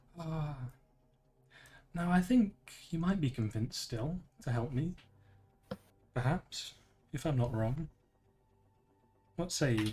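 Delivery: whispering. A woman speaks into the listener's mind, offering her bargain, whispering into your mind. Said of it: "You'll hear as she whispers into your mind".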